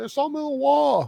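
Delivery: put-on super thick English accent, very high and loud. Quoting a character's line the speaker loves, in a super thick English accent. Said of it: "the super thick English accent will always get me when he's like".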